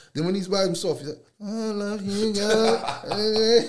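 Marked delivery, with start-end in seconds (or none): 1.4-3.7 put-on very slow, high, drawn-out sugary lover-boy voice. Imitating a boy alone who shows his soft side: imitating a sweet mode. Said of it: "He's in his little sweet mode".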